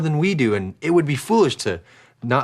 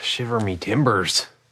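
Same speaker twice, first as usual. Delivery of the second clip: mock pirate talk, lower pitched; 3 semitones lower than usual. Teasing another speaker about sounding odd: put-on pirate voice. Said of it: "You sound like a pirate".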